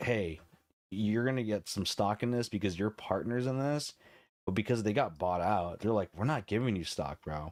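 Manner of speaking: ordinary talk, nothing marked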